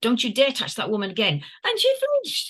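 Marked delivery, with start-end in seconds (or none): 0.0-1.4 firm, polite tone. Retelling stopping a policewoman from grabbing her friend: retelling a firm warning. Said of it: "firm and polite".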